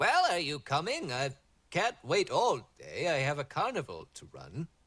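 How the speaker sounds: swooping, sing-song storybook gnome character voice. Narrating a scene where a gnome pokes his head out, in a gnome voice. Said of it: "the gnome pokes his head out and goes".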